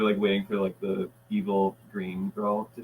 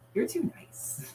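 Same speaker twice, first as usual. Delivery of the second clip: breathy, airy, hushed whispering character voice; 5 dB quieter than usual. Describing a show's nice and evil girls, imitating the evil one: Green Girl voice. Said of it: "that's how she sounds".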